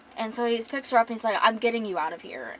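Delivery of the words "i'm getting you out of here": ordinary talk, nothing marked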